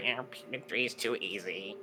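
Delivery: mocking put-on voice. Quoting other people's complaint in a mocking voice. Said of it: "I don't know why I said it in a mocking voice".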